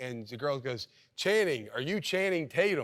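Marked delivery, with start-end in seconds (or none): 1.2-2.8 mock yell, high and carrying. Retelling a stranger yelling across the street: imitating a girl yelling. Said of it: "she's yelling at me".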